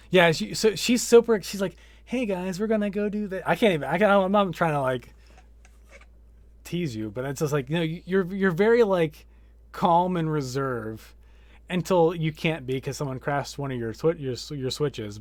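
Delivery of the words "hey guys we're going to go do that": friendly, cute, high customer service voice. Imitating the person being talked to, and how she greets people: cute customer service voice. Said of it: "It's your customer service voice".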